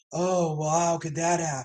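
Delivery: deep, soft voice dropped into bass. Retelling how Angela reacted to the situation, Angela's deep lowered voice. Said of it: "drop her bass in her voice and be like".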